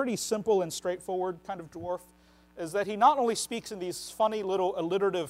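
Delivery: ordinary delivery, nothing marked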